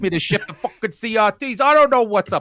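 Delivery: terrible put-on New York accent. Imitating one of a couple of guys in New York, in a terrible New York accent. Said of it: "I do a terrible New York accent".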